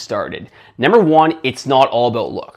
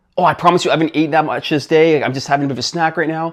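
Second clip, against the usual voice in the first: mock embarrassed girl voice, higher pitch; 4 semitones higher than usual. Retelling a friend caught eating a donut: imitating an embarrassed girl. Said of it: "all embarrassed".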